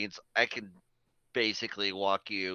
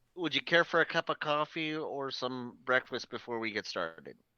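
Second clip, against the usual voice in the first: courteous, polite, businesslike, practical tone; 3 semitones higher than usual. The first officer turns to the player character with an offer; first officer character. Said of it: "This here is my first officer, [name]. / First officer turns to you and she's like, / This here is my first officer".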